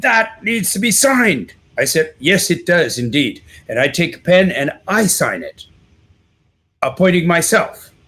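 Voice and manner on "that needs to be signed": high, pitched-up yell. Retelling a story, the speaker acts out the judge: retelling the judge yelling. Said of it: "And the judge starts yelling".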